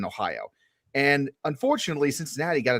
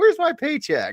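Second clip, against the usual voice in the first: mock awkward dad voice, higher and louder; 13 semitones higher, 5 dB louder than usual. Imitating someone just off the plane: imitating an awkward dad. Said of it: "like an awkward dad showing up to a dance".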